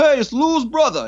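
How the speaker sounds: put-on very high-pitched Italian New York accent. Retelling what someone in a parking lot called out: imitating an Italian New York accent. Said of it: "Italian New York".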